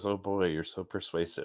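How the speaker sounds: soft, grumbled mutter under the breath. Retelling a remark made about a guest's persuasiveness: imitating own muttering under breath. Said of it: "What I muttered under my breath was".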